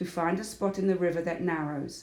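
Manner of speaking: ordinary delivery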